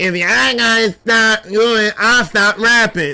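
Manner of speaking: slow, drawn-out, put-on nasal voice. Quoting what a man said, in a put-on nasal voice. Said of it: "how did he say it with his with his, his nasally voice?".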